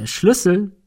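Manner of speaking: triumphant tone. Ben has just taken the key from the nymph's grip, triumphant. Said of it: "sagte er triumphierend".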